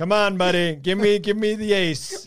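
chummy, high, drawn-out chatty voice. Imitating a friend talking to a blackjack dealer: Mark Ellis impression. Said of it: "that's my Mark Ellis impression".

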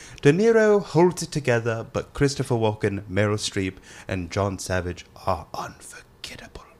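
fake British man's voice. Reading a magazine's movie description after being asked: put-on British guy voice. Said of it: "hit us with that British guy voice".

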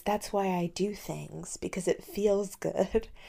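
gentle, hushed, easy, soft little voice. Quoting a drunk film character's line: imitating Rosie's soft voice. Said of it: "your impression of her right now is so good".

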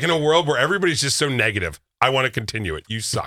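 ordinary talk

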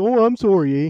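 put-on Canadian accent. Describing a favorite movie character as very Canadian, imitating a Canadian accent. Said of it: "he is so Canadian".

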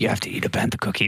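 put-on creepy, scary old-timer voice. Re-quoting Ashley Eckstein's advice before a trip, in an old scary voice. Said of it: "made her sound like an old, scary".

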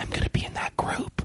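soft, hushed whisper under the breath. Retelling what was said to a friend during a show: imitating a whisper. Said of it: "I remember whispering to my friend Darlene".

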